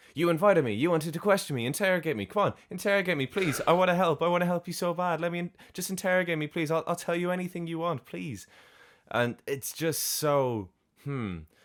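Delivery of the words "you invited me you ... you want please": play-acted over-eager, overly friendly pleading, pitched up. Retelling a film scene, imitating Shelby being too friendly. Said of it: "he's just being too friendly".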